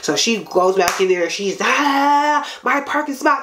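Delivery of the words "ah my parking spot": acted, high, drawn-out, furious outraged outburst. Retelling a parking dispute, quoting the woman: imitating a furious woman. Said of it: "She's hella mad".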